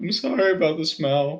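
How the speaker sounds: dejected, defeated voice. Voicing a shunned character apologizing at a meal: very defeated voice. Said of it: "in a very defeated voice".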